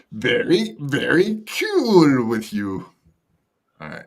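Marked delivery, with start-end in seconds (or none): 0.2-2.9 very slow, dragged-out words. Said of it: "That's my impersonation that [name]'s gonna kill me".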